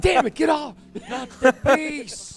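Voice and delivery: put-on panicked yelling. Imagining the runner swatting at bees: put-on panicked yelling. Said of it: "I'm just imagining, she's like".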